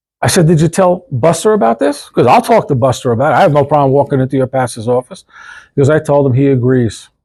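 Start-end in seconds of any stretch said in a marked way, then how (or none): none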